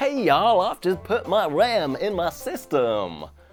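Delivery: bad, slow, put-on American accent. Fitting RAM while trying out accents, the speaker does a put-on American accent. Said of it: "my American accent is better than the rest".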